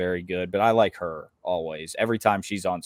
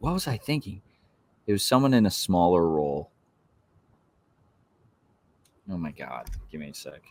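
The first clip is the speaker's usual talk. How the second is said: frustrated, annoyed with himself. Struggling to remember a final draft pick: annoyed with himself. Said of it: "actually so annoyed with myself".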